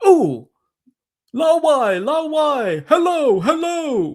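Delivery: very high, dumb-sounding mocking voice. Speaker imitates people in China who greeted them as a foreigner, imitating a stupid, dumb voice. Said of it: "in a stupid, dumb voice".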